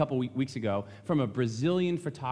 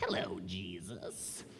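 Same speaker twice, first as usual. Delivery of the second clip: very low, deep, dropped put-on voice; 7 semitones lower, 11 dB quieter than usual. Retelling the devil's temptation of Jesus: put-on devil voice. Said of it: "That's how he sounds".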